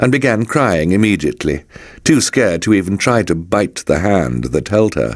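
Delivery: ordinary delivery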